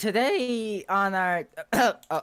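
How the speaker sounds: voice breaking and cracking mid-line. Host opening a tech show episode, voice cracking. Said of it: "that voice crack".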